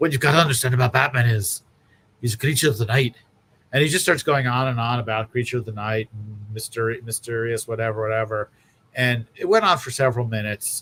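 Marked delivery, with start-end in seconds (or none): 0.0-3.1 put-on heavy, laid-on Scottish accent. Retelling a panel answer about Batman: Grant Morrison's heavy Scottish accent. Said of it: "in his heavy Scottish accent that I can in no way really replicate".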